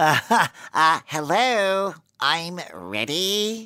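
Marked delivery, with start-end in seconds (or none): 1.1-3.7 put-on valley girl cartoon voice. Answering a request to say it as a valley girl SpongeBob, in valley girl SpongeBob voice. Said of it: "like a valley girl SpongeBob".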